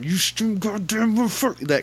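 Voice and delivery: very high scolding through gritted teeth. Recalling being spanked and scolded, quoting it through clenched teeth. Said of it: "like through clenched teeth while talking".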